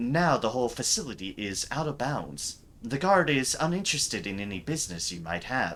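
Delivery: ordinary delivery, nothing marked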